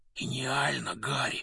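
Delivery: soft, hushed, voiceless half-whisper. Narrator reading a story voices one character speaking to another: half-whispered. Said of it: "прошептал Рон".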